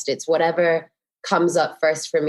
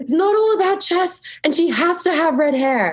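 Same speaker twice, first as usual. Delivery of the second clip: very high, shrieked, excited, overwhelmed scream; 13 semitones higher than usual. Retelling bursting into a restaurant to meet a director: retelling a scream. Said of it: "screamed at him and said".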